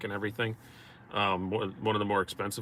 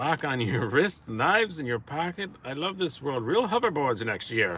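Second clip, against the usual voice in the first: put-on loud, raised-pitch old-time newsreel announcer voice; 5 semitones higher, 5 dB louder than usual. Joking about swatches and hoverboards, in a twenties news announcer voice. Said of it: "I did that in twenties news announcer voice".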